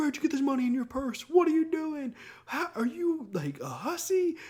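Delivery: very high, shrill, swooping put-on furious yell. Retelling a high school boy confronting a girl: imitating someone yelling. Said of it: "yelling at her".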